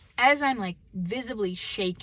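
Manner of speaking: ordinary talk, nothing marked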